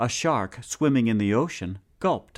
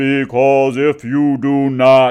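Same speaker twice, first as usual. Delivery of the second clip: very loud, slow, threatening growl; 3 semitones higher, 11 dB louder than usual. Narrator reading the man in the sun's reply, growled. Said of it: "growled the man in the sun".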